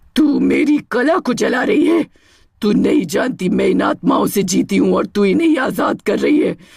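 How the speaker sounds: furious, menacing, rotting witch voice. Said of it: "उसका चेहरा अब मानव नहीं, एक सड़ी हुई चुड़ैल का रूप ले चुका था। / उसका चेहरा अब मानव नहीं, एक सड़ी हुई चुड़ैल का रूप ले चुका था। लहंगे जलते देख वो पागल हो गई। / लेकिन तभी वहां [name] प्रकट हो गई। / [na".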